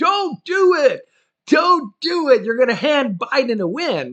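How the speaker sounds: high, very loud screaming. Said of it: "screaming from the loudest megaphone ever".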